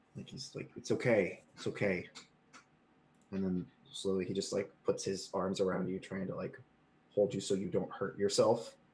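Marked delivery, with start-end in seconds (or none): 0.8-2.1 slow, soothing, mock calming and settling reassurance. Retelling how he calmed the listener after an injury, imitating a soothing tone. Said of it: "he's like trying to calm you down".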